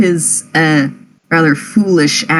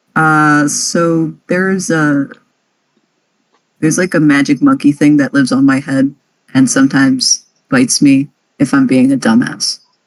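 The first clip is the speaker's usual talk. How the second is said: flat, low deadpan in character; 4 semitones lower than usual. Voicing a character explaining something odd to another character: deadpan in character. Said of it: "he deadpan".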